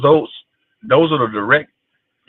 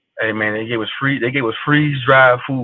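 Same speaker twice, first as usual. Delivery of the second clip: ordinary talk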